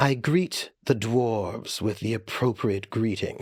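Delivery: put-on slight, understated, light hint of British accent. Player voicing a character greeting the dwarves in a game, light British accent. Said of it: "a light British accent".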